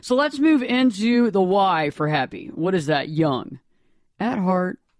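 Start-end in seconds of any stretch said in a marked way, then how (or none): 3.1-4.7 put-on short pause between young and at heart. Talk on staying young at heart: short pause after 'young'. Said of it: "You'll notice a little pause there".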